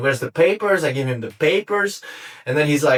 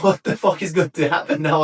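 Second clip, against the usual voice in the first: put-on panicked tone; 2 semitones higher than usual. Retelling own words with a gun in the face: imitating own past panic. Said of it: "I'm totally panicked".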